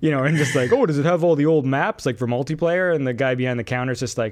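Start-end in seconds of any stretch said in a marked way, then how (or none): 0.7-1.8 loud, dopey, clueless-sounding voice. Retelling customers asking the clerk about a game, in a stupid customer impression. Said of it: "my impression of a stupid customer".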